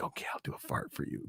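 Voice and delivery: very hushed, soft, breathy whisper. Showing how Alexa whispers back to the user: imitating Alexa whispering back. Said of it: "She'll whisper back to you".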